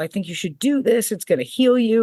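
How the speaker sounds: put-on excited voice. Retelling a phone call where he urged trying it: imitating someone excited. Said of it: "he was all excited".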